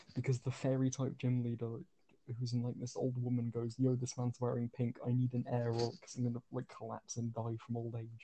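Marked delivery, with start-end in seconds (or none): none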